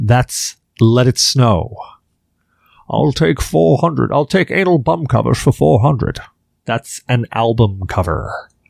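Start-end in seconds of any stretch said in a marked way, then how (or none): 2.9-6.2 raspy voice, done badly on purpose. Showing the origin of the voice: bad Sean Connery impression. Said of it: "a bad impression of Sean Connery".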